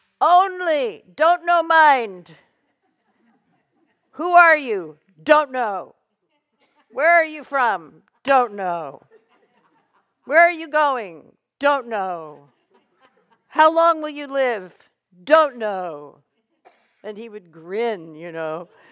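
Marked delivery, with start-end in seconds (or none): 0.2-16.2 raised, loud yell with the word "only" stretched. Passing on a teaching that stayed with you all these years, imitating a teacher yelling. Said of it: "He used to yell that".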